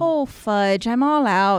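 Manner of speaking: attempted put-on Wisconsin accent that sounds Irish. Play a sweet old lady answering her door about wreaths, in an attempted Wisconsin accent that sounds Irish. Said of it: "I was trying to do Wisconsin".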